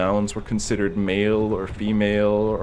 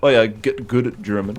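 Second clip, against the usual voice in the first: normal talking voice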